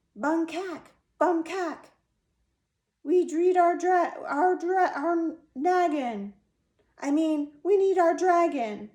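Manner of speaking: tiny, very high, shrill, excited squeal. Reading a story aloud, voicing a tiny voice that screams, in a tiny excited scream. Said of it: "tiny, excited voice scream".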